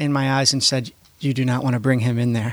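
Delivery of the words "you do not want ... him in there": solemn, earnest, dead-serious, grave tone. Retelling what was said to a mom waiting in line: dead-serious warning. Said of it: "with the most serious look in".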